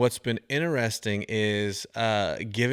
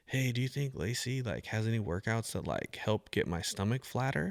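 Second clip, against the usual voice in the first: whispered, much quieter; 7 dB quieter than usual. Retelling a question someone came over and whispered, whispering. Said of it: "she comes over and she whispers".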